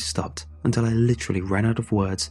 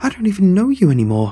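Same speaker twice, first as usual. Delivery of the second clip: shrill, very loud, high-pitched snapping outburst; 10 semitones higher, 9 dB louder than usual. Told by the father to trust him, answering back: snapping. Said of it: "I snapped".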